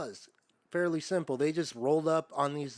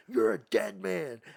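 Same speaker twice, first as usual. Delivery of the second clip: rough, drawn-out, contained scream; 3 semitones higher than usual. Retelling a lawyer screaming at a parole board member: imitating a scream. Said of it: "screaming in a".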